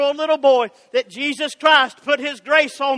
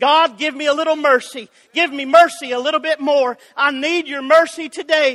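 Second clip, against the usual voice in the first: imitated pleading, begging tone. Retelling a blind beggar asking god for mercy: imitating a begging plea. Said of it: "a blind beggar was just begging".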